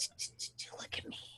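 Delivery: breathy, soft ASMR whisper with mouth noises. Retelling a film scene where a witch pins someone down: imitating an asmr whisper. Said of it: "whispering and making noises".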